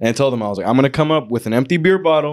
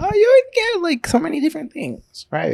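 put-on very high, swooping little old lady voice. Retelling what someone says when taking their drink: old lady voice imitating Nat. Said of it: "Why does she sound like an old lady?".

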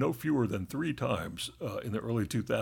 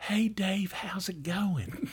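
put-on, very slow, high Southern drawl; 9 semitones higher than usual. Retelling how she would greet Dave: imitating a Southern accent. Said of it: "you are really from the South".

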